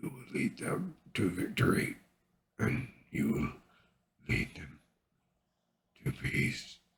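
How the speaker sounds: soft, gentle, moist-sounding, hushed murmur. Narrator reads a character handing on his armor and weapon, in a soft, wet voice. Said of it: "said Doomhammer in a soft, wet voice".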